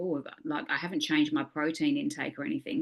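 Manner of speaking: ordinary talk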